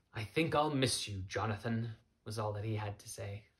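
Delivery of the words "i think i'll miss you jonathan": sighing, much lower pitch. Sullivan answers jonathan, who says he must go back, sighing. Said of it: "Sullivan sighed".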